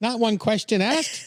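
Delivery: put-on Canadian accent. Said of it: "I can't do Canadian".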